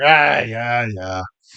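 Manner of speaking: reluctant grumbling. Playing the bartender answering a customer's order, grumbling. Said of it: "You hear him kind of grumble".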